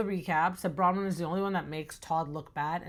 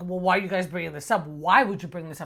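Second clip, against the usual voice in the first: put-on mad, defensive voice, louder; 6 dB louder than usual. Retelling how Bronwyn reacts when the group questions her: imitating Bronwyn getting mad. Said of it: "gets all mad and that little stink face".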